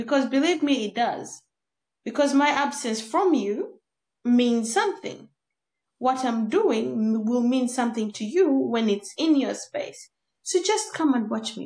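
normal talking voice

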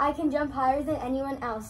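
ordinary delivery

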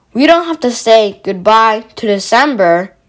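plain reading voice

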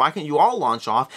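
ordinary delivery

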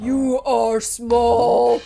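deep, ancient, very aged voice. Narrator reads a mountain creature speaking to small men: deep, aged voice. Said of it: "The voice is deep and aged as the earth itself".

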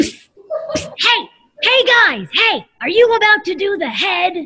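high-pitched dinosaur character voice. Voicing a dinosaur who drops in with tips for the kids: Allie the Allosaurus voice. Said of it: "This is Allie the Allosaurus".

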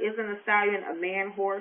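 plain

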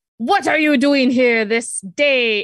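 slow, loud, archaic-sounding alien voice.

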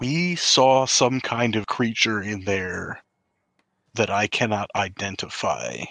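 voice dropped low. In a role-play game, a player's character approaches a lady, lowered voice. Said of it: "I'm going to lower my voice".

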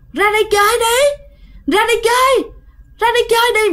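very high, shrill, eerie woman's voice. Telling a scary story, voicing the call heard after the knocking: shrill creepy woman's voice. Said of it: "giọng the thé của một người phụ nữ rất là ghê".

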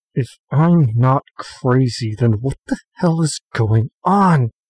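spoken through gritted teeth, clenched jaw. Voicing a character answering on a balcony: through gritted teeth. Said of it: "through gritted teeth".

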